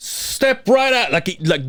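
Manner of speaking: put-on yelling. Retelling buying drinks, quoting the man calling him to the register: imitating someone yelling. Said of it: "he's like yelling".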